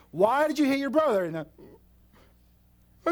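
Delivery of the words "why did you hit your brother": shrill scolding shout. Parent acting out scolding a child for hitting his brother, reenacting own yelling. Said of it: "I'm yelling".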